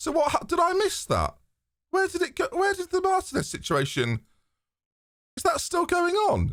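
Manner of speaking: voice going very high in confused panic.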